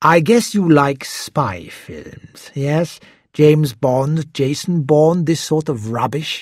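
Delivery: plain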